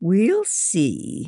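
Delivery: said through a laugh. A woman answers a girl's request; laughing. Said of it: "Miss Lee laughed".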